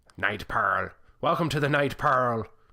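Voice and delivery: buccaneer-style pirate accent. A host reads out the username night pearl, in a pirate accent. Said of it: "I can't say his username without a pirate accent".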